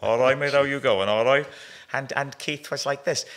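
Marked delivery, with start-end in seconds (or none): 0.0-1.5 put-on rapid loud Cardiff accent. Describing an old double act with Al, the speaker does Tony: Tony voice, Cardiff chiefo. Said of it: "What you'd call in Cardiff a chiefo".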